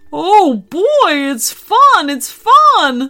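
cheerful. Narrator reading the little dinosaur's line in a story, cheerful. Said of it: "said the dinosaur cheerily".

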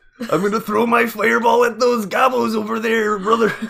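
high, booming, belted-out wrestling-promo voice. Imagining a wrestler as a fantasy game sorcerer: Macho Man Randy Savage impression. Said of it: "Macho Man Randy Savage as if he was playing a sorcerer".

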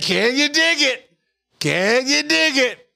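high, slow mock announcer voice in falsetto.

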